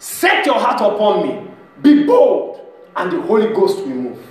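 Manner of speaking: loud, authoritative, commanding voice. Recounting a dream, the speaker quotes what the Lord said, imitating His very authoritative voice. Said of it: "very authoritative".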